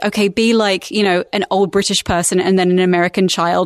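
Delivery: ordinary delivery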